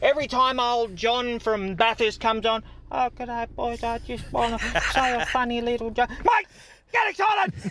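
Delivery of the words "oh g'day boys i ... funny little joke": quiet, subdued, unexcited, low-energy voice. Complaining about quiet callers, imitating John from Bathurst. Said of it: "All these quiet callers are just doing my head in".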